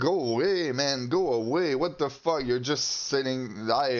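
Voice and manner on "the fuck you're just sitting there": normal talking voice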